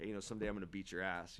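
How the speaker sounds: plain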